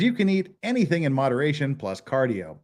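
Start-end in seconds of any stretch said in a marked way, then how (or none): none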